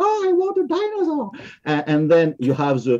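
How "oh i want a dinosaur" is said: put-on very high little-child voice. Describing a family in a 3d printer ad, voicing the kid: imitating a small kid. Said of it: "And the small kid arrive".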